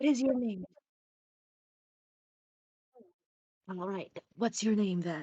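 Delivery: whispering in a put-on character voice. Voicing a character who quietly asks another's name: whispering in character. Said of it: "they're both whispering to each other".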